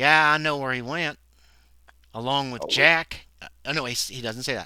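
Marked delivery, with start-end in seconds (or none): 0.3-3.3 heavy Southern drawl, louder. Voicing a father character asking about someone: thick Southern accent. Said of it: "very thick accent, Southern accent".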